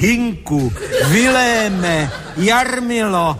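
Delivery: put-on high, slow, theatrical young lady's declaiming voice. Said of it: "slečna s úderem dvanácté zvolala".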